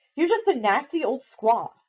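loud, high, snapped-out delivery. Reading a story aloud, a character snaps at another character. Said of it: "she snapped at Nestena".

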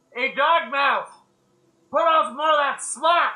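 very loud, high, shrill yell. A character yells back to someone for more porridge, yelling. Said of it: "He yells back".

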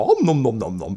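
munching sounds. Narrating a scene where a little hand grabs chocolate, making munching sounds. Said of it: "grab some chocolate and go".

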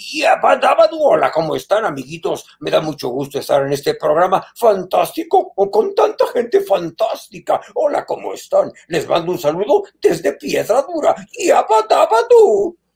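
swooping, bouncy cartoon caveman voice. Greeting the show's audience, in a Pedro Picapiedra voice. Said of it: "como el Pedro Picapiedra".

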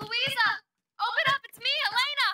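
very loud, high calling out. A character outside calls to people inside to be let in: shouting. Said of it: "Stop shouting".

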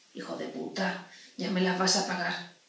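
mumbled low under breath. Ducking her head as she enters the consulting room, a woman mutters under her breath. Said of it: "murmuró por lo bajo".

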